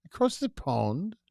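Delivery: bad fake British accent. Host repeats a phrase while chatting, putting on a bad British accent. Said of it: "That's a bad accent".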